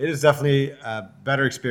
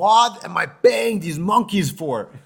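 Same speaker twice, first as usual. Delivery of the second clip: put-on yell, higher pitch; 5 semitones higher than usual. Retelling a guy yelling at his waiters out into the air, imitating his yelling. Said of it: "apparently the guy was yelling at his waiters".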